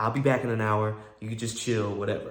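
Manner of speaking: plain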